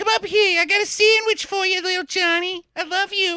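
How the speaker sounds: very high, coaxing put-on mom voice. Joking about how the villain could fake the mother's voice: faking a mom's voice. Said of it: "your mom's luring you places with sandwiches".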